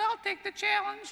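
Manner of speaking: put-on squeaky, very high-pitched old man's voice. Quoting a skinny older man accepting the challenge: squeaky high voice. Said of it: "with a squeaky high voice ... That's my impression of the squeaking voice".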